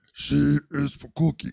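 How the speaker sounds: put-on puppet-monster voice, failed attempt. Joking with others about voices, attempting a Cookie Monster impression. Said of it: "You don't sound like Cookie Monster".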